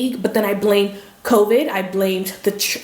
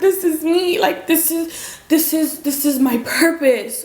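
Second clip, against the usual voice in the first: speaking through tears, tearful and higher-pitched; 7 semitones higher than usual. Recalling finding out she was pregnant, crying while talking. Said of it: "I was not trying to cry".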